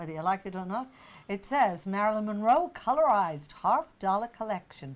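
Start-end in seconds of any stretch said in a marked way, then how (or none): 1.9-5.0 put-on American accent. Reading a coin collection's certificate of authenticity aloud, in an american accent. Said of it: "I'm going to do it in an American accent".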